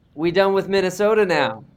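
broad hometown accent. Sports show host prodding a colleague to repeat an earlier line, imitating hometown accent. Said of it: "Say what you were saying earlier in your town's voice".

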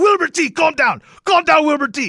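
put-on Spanish accent.

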